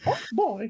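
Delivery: high-pitched cartoon mouse character voice. Asked by another player to do a quick Mickey Mouse voice. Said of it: "do your Mickey Mouse really quick".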